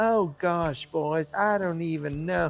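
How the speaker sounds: slow, put-on Southern belle drawl. Describing how they voice the character: Almondretta voice, Southern belle accent. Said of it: "I'm doing this, like, Southern belle".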